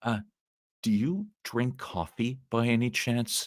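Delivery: painfully slow, drawn-out, word by word. Retelling the question a man asked while walking over, imitating very slow speech. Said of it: "he's speaking really slow".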